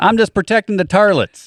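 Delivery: put-on hillbilly accent. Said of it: "we're gonna need to do that with some kind of different accent".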